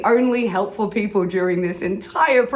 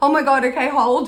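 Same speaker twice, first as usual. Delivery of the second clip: mock panicked words, higher; 5 semitones higher than usual. Retelling a phone call, imitating a panicking receptionist. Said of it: "the receptionist starts panicking".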